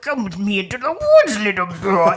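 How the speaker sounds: weird, loud voice swooping all over. Describing an actor playing the heron in The Boy and the Heron: weird Heron voice. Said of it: "did that weird voice for the boy and the heron".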